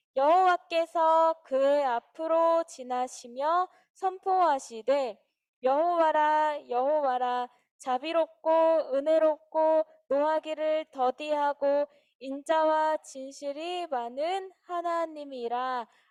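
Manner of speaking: slow, clear, loud, deliberate reading in unison.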